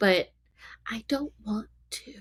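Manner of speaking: quiet, hushed, low, soft voice. Admitting something that feels almost taboo to say, said quietly. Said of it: "that so quietly because it's like almost taboo".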